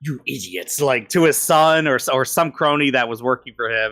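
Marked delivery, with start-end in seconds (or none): 0.0-0.8 soft, heavy, thick put-on Austrian accent. Recalling a line from the first movie, in a thick Austrian accent. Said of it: "thick like Austrian accent or something".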